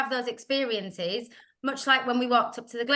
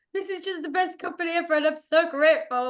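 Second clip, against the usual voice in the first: mock choked-up, tearful sobbing gush; 5 semitones higher than usual. Recounting being found crying in bed, imitating past self sobbing. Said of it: "I was like sobbing".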